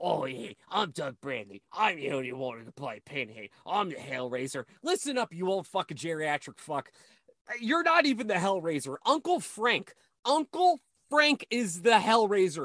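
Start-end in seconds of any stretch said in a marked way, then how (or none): 0.0-4.6 voice dropped very low, deep. Retelling what Doug Bradley says at conventions: imitating Doug Bradley. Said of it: "He's all like".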